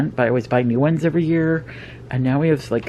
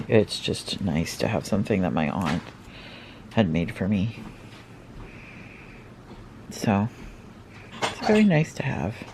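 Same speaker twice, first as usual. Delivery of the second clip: soft, breathy near-whisper, a little moved; 5 semitones lower, 8 dB quieter than usual. Sharing a personal story, a little emotional. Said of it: "Sorry, a little emotional".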